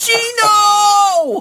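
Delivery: very high-pitched, drawn-out yell. Showing how he wants to scream someone's name, shouted in Rocky voice. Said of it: "I want to scream like in a Rocky voice".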